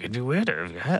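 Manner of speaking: quiet, subdued, soft and gentle voice. Retelling how he said it in his non-meathead voice, quiet voice. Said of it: "he said it like in his quiet".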